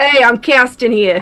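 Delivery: put-on Boston accent. Speakers trying out accents, one doing a line in a put-on Boston accent. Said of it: "Boston's a little bit easier to put on".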